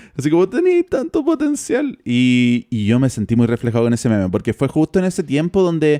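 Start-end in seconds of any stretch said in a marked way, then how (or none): 0.5-2.0 put-on very high, weeping, crying lament voice. Retelling a meme where a reviewer buries an album, imitating Anthony Fantano crying. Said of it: "el loco se pone a llorar y dice".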